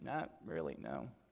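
very low, very soft, sheepish thief voice.

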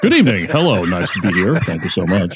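low, professional on-air announcer voice. Dared by the host to speak in it: broadcaster voice. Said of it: "you're daring me to speak, uh, in my".

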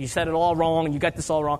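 plain

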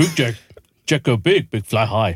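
caveman-style voice speaking broken English. Joking about the word jumbo with friends, speaking as a Neanderthal speaking English. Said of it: "trying to do a Neanderthal speaking English".

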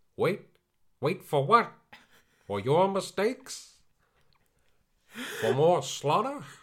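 very high, very loud put-on Sicilian accent. Imitating the father's line to the detectives from the movie: put-on sicilian accent. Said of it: "his accent goes Sicilian at one stage".

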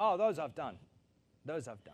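lofty, self-important, puffed-up bragging tone. Retelling the rich young ruler's reply to Jesus: imitating a pompous man. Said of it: "he was real pompous".

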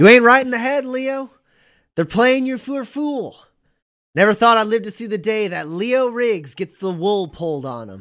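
very loud, very high, shrill shout. Narrating a gunfight, the speaker voices a woman shouting at Leo from cover: shouting. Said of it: "she shouts out".

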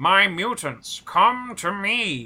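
high cartoon voice, every word stretched out. Showing how Professor Xavier talks in the ninety-two cartoon: 1992 cartoon Professor Xavier voice. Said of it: "where he talks like this".

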